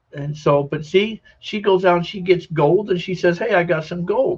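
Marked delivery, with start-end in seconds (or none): 3.3-4.3 play-acted, cheerful, happy, pleased tone. Retelling what she says after finding gold, imitating her happy voice. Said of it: "And she's happy with it".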